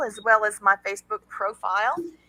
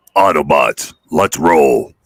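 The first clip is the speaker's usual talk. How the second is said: acted heroic robot commander voice; 12 dB louder than usual. Urged by friends to do the voice, the speaker does an Optimus Prime voice. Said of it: "He's got a voice like uh".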